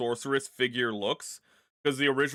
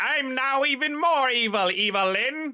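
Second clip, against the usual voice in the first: very high, slow, stretched drawl; 11 semitones higher, 4 dB louder than usual. Retelling how a character turned into Skeletor now talks: high-pitched Skeletor voice. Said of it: "He gets a high pitched voice and is like".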